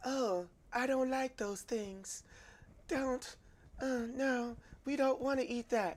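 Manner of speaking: very quiet, high-pitched, hushed voice. Man acting out a dinner conversation with his wife, imitating his wife. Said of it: "give you the full look of my wife".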